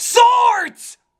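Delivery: exaggerated, high, loud mocking shout.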